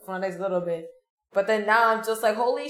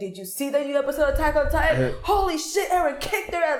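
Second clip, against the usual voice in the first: mock eager, gushing, pitched-up excited chatter; 6 semitones higher than usual. Imitating own enthusiastic talk with anime friends. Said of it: "I talk very enthusiastically".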